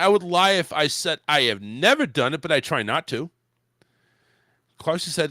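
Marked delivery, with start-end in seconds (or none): none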